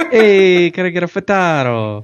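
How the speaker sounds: put-on New York accent. Ordering a frittata as a joke: put-on New York accent. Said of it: "is it supposed to be New York?".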